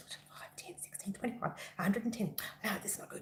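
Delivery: very hushed, barely-there whispered counting. Showing the counting heard while designing a crochet pattern: imitating own whispering. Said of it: "all you can hear me do is whisper numbers".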